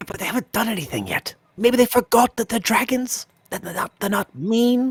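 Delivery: high, carrying stage whisper, said aside. A party member confers with Awen about the dragons nearby, in a stage whisper. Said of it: "We're stage whispering".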